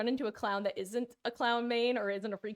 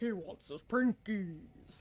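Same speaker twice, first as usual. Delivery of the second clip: very drawn-out, slow, put-on deep voice. Trying the voice again, getting it lower: put-on lower voice. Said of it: "There we go".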